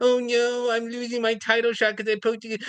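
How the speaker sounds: fake sobbing through every word, pitched high. Retelling how a fighter acted on the ground: mock crying. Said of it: "on the ground crying".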